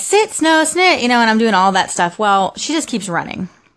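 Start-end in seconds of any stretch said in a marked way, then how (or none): 0.0-1.0 raised, higher-pitched yell. The speaker retells running after Snow down the block, retelling a yell. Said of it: "I'm like yelling at her and I'm like".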